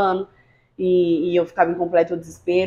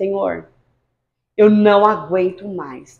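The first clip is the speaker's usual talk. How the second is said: slow, weeping, tearful pleading voice; 4 dB louder than usual. Recalling kneeling at dawn and praying to God, retelling a tearful plea. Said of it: "Eu lembro que eu ajoelhei chorando de madrugada".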